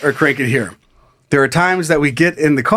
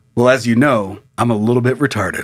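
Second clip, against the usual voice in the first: imitated manner in a lower voice; 3 semitones lower than usual. Retelling how he stopped, looked up at the speaker, and spoke, imitating what he said. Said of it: "he just looks up and he goes".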